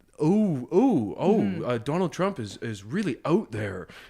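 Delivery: put-on slow Canadian accent in news anchor style. Imitating how the newsreaders sound on the CBC News: Canadian accent like CBC News. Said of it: "you can really hear it".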